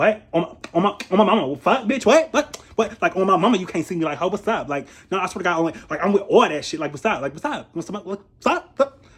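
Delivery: confrontational, over-animated, expressive, mad rant. Retelling a woman getting mad about a situation, mock-aggressive. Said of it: "she was very aggressive".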